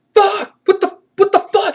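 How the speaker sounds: high, squealing, panicked swearing. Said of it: "He's like".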